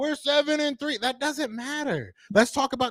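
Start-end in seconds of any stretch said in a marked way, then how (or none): 0.0-1.0 yelling, higher pitch. Retelling how the other speaker kept repeating a point: imitating someone yelling. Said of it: "You've been yelling over the whole time, yelling".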